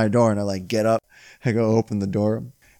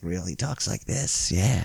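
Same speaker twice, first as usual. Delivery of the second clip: low, soft, creepy, unsettling voice; 4 semitones lower, 7 dB quieter than usual. Telling friends about the new food delivery guy, the speaker imitates his creepy voice. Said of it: "It's a creepy ass voice".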